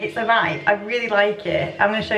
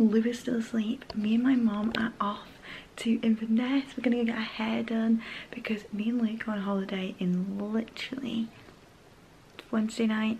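speaking in a hushed whisper; 8 dB quieter than usual. Vlogging at 5 a.m. while lou is still asleep, whispering. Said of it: "I'm whispering".

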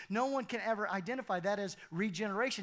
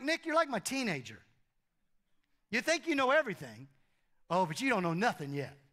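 mock, heavy sarcasm in a swooping sing-song. Retelling how Jesus speaks to Nick: imitating Jesus being sarcastic. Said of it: "he's being sarcastic with Nick".

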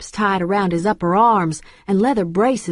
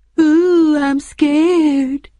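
loud, high, assumed put-on falsetto; 8 semitones higher, 6 dB louder than usual. A narrator reads a man's reply to a threat, assumed falsetto. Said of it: "in an assumed falsetto".

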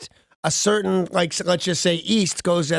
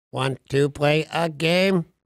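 voice like a movie's computer; 2 semitones lower than usual. Joking with co-hosts about fiction becoming real, doing an impression of a movie computer. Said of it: "here's my best impression ever".

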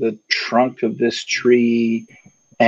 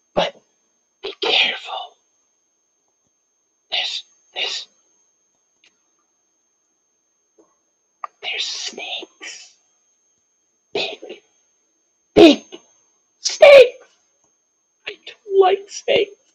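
whisper, much higher pitch. Teacup leans in close after giving the party directions: whispering. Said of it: "leans in close and whispers".

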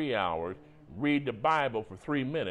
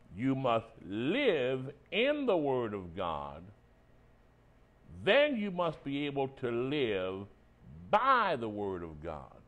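speaking slowly and deliberately. Telling listeners to put this in their notes, the speaker is saying it slow. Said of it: "I'll say it slow".

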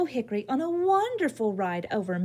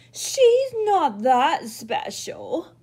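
loud, yelled line; 3 semitones higher, 4 dB louder than usual. Purple Beech, a leaf left watching, complains to the others, yelling. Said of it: "yelled Purple Beech".

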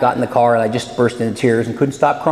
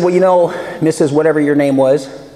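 ordinary talk

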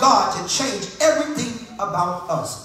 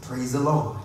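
put-on voice sunk into the chest, deep and low; 9 semitones lower, 5 dB quieter than usual. Imitating someone saying 'praise the Lord', in a deep voice. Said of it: "In that deep voice".

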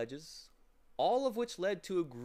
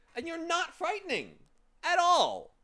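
very high, shrill, affronted, indignant outburst; 7 dB louder than usual. Milo to a small furry creature, indignantly. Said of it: "Said Milo indignantly".

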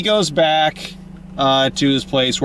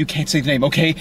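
ordinary talk, nothing marked

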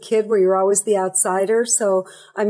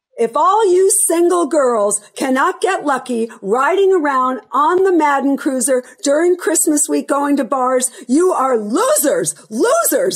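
mock mild jeering yell, pitched up; 6 semitones higher than usual. Retelling a story of a man yelling at a departing bus: imitating John Madden yelling. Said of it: "in the middle of the road yelling".

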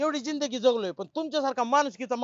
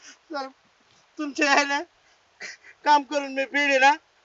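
weeping while speaking; 2 semitones higher, 4 dB louder than usual. Told not to cry, the speaker answers the sir offering money, crying. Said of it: "रडू नको तू".

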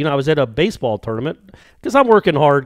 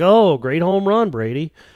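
sarcastic, mocking, insincere tone; 4 semitones higher than usual. Recalling his reaction when brady hit a home run: sarcastic fake praise. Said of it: "the only way I speak is in sarcasm".

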